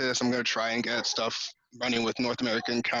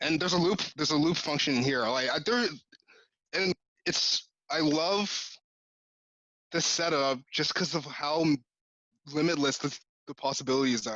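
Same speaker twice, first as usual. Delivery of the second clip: stumbling, stammering, restarting phrases; 3 semitones higher than usual. Describing a loop setup to the others, stammering over words. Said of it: "stammering over my words here".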